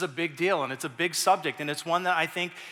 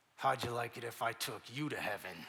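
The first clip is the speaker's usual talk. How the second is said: very hushed, low, menacing, through gritted teeth; 6 semitones lower, 11 dB quieter than usual. Retelling what a kid said to him about Boodog, imitating talking through gritted teeth. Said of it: "he says through his teeth".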